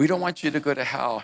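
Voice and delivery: put-on weepy, earnest, tearful crying voice. Retelling how church people came up to them crying, imitating a crying plea. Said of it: "they would come up to me crying".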